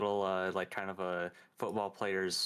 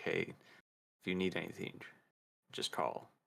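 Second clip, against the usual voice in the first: quick, soft whisper close to the ear; 4 semitones lower, 6 dB quieter than usual. Speaking into someone's ear so another man can't see, whispering. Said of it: "I'll whisper in Erebus's ear".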